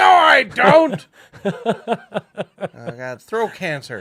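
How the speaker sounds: very high, very loud, drawn-out altered voice. Retelling calling a business while imitating Michael Dyer. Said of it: "you sound different".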